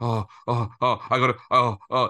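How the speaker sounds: put-on panicked, halting, drawn-out flustered dithering. Retelling a friend rushing back for signed items: imitating someone panicking. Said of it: "He was panicking".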